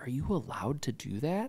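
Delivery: acted dead-serious tone. Retelling a friend's question about starting a church: imitating a serious question. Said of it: "he got real serious".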